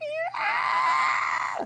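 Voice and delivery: very high, shrill, piercing rabbit-like animal scream. Retelling the sound of a scared rabbit in the woods: imitating a screaming rabbit. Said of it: "you hear this, like".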